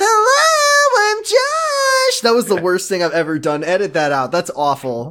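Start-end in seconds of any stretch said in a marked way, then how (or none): 0.0-2.2 loud, squeaky, high helium voice. On an episode, joking about helium, doing a Josh impression in helium voice. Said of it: "please let Josh have helium voice so I can do an impression".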